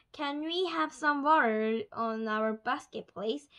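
plain reading voice

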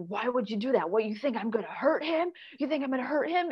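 acted-out screaming and yelling, completely losing control. Retelling how he flipped out at her: imitating someone screaming. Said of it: "he started screaming at me".

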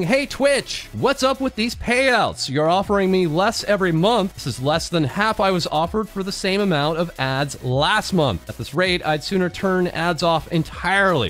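usual speaking voice

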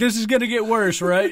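imitated nervous laughing. Retelling a friend's reaction to a prank: imitating nervous laughter. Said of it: "it was complete nervous laughter".

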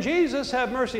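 crying out. Retelling how Bartimaeus cried out again after being hushed: imitating Bartimaeus crying out. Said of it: "Bartimaeus cries out again".

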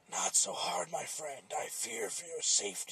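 crying out, pleading. Narrator reads the blade's words as the puppet wraps its arms around it; talking machete crying out. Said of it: "The puppet could now see that the voice was coming from a large blade. ... The machete".

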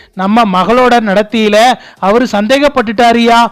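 ordinary delivery

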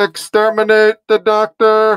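mechanical enemy machine voice, loud, flat and level. Trying out a voice through the gadget being discussed, in a Dalek voice. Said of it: "You could do a Dalek voice through this".

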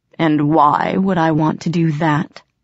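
ordinary talk

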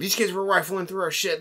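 loud accusing yelling. Telling how people chased them back to the speaker's parents, retelling someone yelling. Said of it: "yelling at them".

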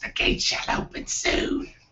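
sibilant, hissing monster voice. Narrating a scene to the group as a vision fades: hissing monstrous voice. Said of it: "like hissing monstrous voice".

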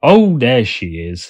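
slow, happy, glad cry. Narrator voicing a man who came to see the matter, crying out happily. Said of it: "he cried happily".

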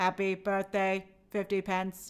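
flat, monotone, mechanical robot voice. Wishing 50 Pence happy birthday on request, in a robot voice. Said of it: "You want a happy birthday in a robot voice?".

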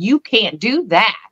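firm, scolding manner of speaking. Retelling how she scolded the thing: imitating someone speaking firmly. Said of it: "she's being very firm with this thing".

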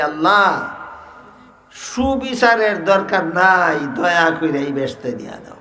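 ordinary talk, nothing marked

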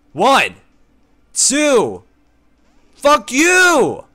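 very loud, very high-pitched, slow, drawn-out yelling. Streaming a game, hyped about getting a shiny, yelling. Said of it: "I gotta stop yelling".

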